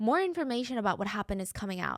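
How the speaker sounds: ordinary delivery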